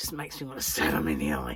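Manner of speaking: deep demonic voice. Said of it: "Did you hear the demon voice?".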